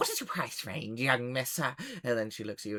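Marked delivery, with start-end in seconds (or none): 0.0-1.6 excitable, quirky, eccentric gnome voice. A game narrator voices a gnome answering a player, excited eccentric gnome voice. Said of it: "is like really like excited and a little bit eccentric".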